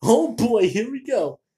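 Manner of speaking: high, loud, excited exclamation.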